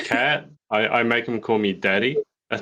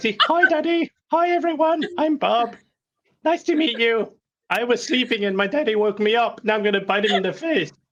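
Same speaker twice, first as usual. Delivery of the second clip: very high-pitched talking cat voice; 12 semitones higher than usual. Giving the pet cat a voice as the others ask: high-pitched voice for cat Bob. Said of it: "he's gotta do the voice".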